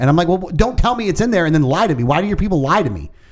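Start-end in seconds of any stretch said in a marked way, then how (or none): 0.3-2.4 heated, indignant, angry, accusing outburst. Retelling yelling at restaurant staff over missing sauces: imitating himself yelling angrily. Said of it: "I started yelling at the people in there".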